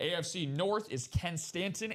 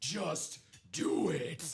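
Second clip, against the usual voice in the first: put-on hype voice, delivered dead intense. Urging someone to go for the vault, in Shia LaBeouf voice. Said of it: "in great Shia LaBeouf voice".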